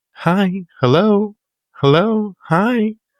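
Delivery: put-on tiny, very high girlish voice. Describing a strange phone call, imitating the caller, little girl voice. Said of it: "it was like a little girl voice".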